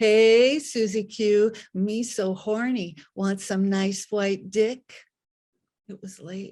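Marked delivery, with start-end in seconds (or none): 0.0-4.8 very slow, loud, drawn-out mocking jeer. Retelling three guys taunting on the way to the bus stop: imitating a taunt. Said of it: "three guys taunting me".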